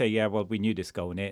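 plain

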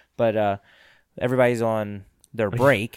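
ordinary talk

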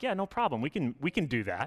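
acted, heavily sarcastic, sing-song, swooping yes. Retelling how the disciples answer the impossible command: imitating sarcastic disciples. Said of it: "That's sarcasm".

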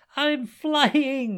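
very loud, shrill, high-pitched yell. He rises into the air on his new wings: shouting. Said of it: "he shouted with".

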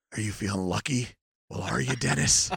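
very low, scolding voice. Imagining an actor scolding a boy nose to nose: Clint Eastwood scolding voice. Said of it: "imagine Clint Eastwood scolding Dennis the Menace".

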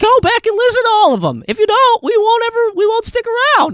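tiny, very high, pleading fairy or pixie voice. Show host urging listeners to go back and hear earlier episodes, in a put-on fairy voice. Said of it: "I don't know why I started doing that voice and couldn't quit".

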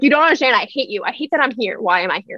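put-on angry ranting voice. Retelling what was said when people asked why so angry: imitating own angry self. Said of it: "Why are you so angry?".

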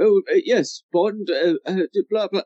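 put-on muddled old man voice. Imitating the Minister from the films: imitating the confused old Minister. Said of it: "he seems ever so slightly more confused".

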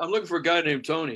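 put-on Houston, Texas accent. Speaker retelling what a driver said when picking him up, Texas accent. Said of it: "I'm using the accent because this is Houston, Texas".

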